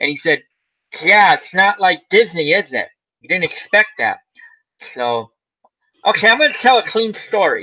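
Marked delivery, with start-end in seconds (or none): 1.0-4.2 bad, rough, put-on comic voice. Retelling a comedian's remark to horrified audience members: Buddy Hackett impression. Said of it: "he always talks, like, sort of like this".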